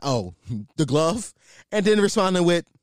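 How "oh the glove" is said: teasing, scornful, mocking, derisive tone. Retelling a man mocking a great defender by his nickname: retelling a mocking jab. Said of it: "mocking like".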